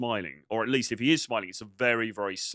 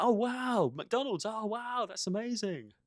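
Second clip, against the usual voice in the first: acted, very high, drawn-out, overly impressed gush; 12 semitones higher, 5 dB quieter than usual. Retelling how coached guys react to her job: imitating a grinning, overly impressed guy. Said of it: "they're smiling like this".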